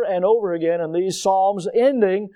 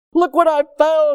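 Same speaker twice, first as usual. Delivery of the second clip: put-on thrilled English accent, laid on, pitched up; 8 semitones higher, 4 dB louder than usual. Retelling a searcher jumping with excitement over his find, imitating excited English accent. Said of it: "With an English accent".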